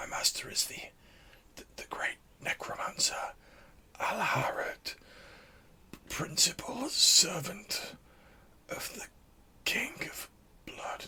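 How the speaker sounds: breathy dying whisper, fading and tailing off. Storyteller voicing a dying man's last words to the players, voice tailing off. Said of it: "his voice is like tailing off".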